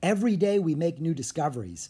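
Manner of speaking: ordinary delivery, nothing marked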